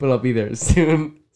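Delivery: very loud, slow speech, giggling through the words. Telling Nate on a call they'll be there soon, laughing while talking. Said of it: "It's making me laugh".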